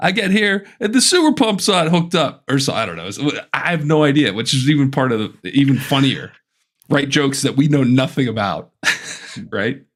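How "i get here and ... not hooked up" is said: high-pitched, hokey, corny comedian voice. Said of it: "He's like".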